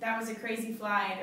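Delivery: ordinary delivery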